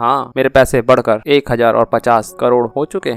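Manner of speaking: plain reading voice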